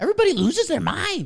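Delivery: very high, weird comic-book villain voice, rushed. Talking about sports fans going wild, the speaker slips into a bad Joker impression. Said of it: "This weird bad Joker impression".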